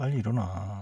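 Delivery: sweet, tender, affectionate delivery. Asked to redo a wake-up call sweeter; sweet tender tone. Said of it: "좀더 더 달달하게 해주세요".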